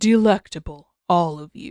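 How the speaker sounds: deep, rich, unnervingly unsettling monster voice. A creature looms over a group and addresses them, deep, unnervingly rich voice. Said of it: "the creature said in a deep, unnervingly rich voice".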